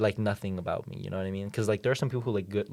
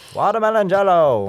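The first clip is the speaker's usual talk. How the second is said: 1950s broadcaster voice, much higher and louder; 11 semitones higher, 15 dB louder than usual. Retelling something said at a store, the speaker uses a 1950s broadcaster voice. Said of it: "sounded like a 1950s broadcaster".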